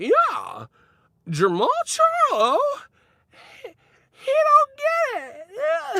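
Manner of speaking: squeaky, very high, slow mousy voice. Speaker mocks how people in old media talk: mousy high-pitched voice. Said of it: "mousy, high pitched voices".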